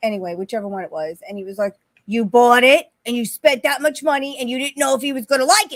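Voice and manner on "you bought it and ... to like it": very loud, high shouted yell. Retelling what he said about a gift bought: imitating someone yelling. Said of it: "Why are you yelling at me?".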